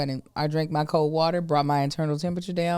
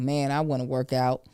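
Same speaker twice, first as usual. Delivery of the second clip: ordinary talk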